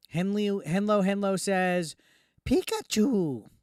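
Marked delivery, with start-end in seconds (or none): 2.4-3.4 horrible cartoon creature cry. Reading a name from chat, doing a horrible Pikachu impression. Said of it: "that was a horrible Pikachu, uh, impression".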